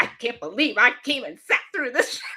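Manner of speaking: furious, outraged venting. Retelling how the father reacted after seeing the play: imitating an angry father. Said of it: "he was so mad".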